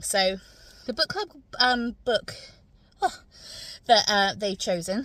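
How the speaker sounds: winded, breathless, halting, broken-up phrasing. Speaker just back from toddler group, talking to listeners, out of breath. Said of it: "I'm a bit out of breath".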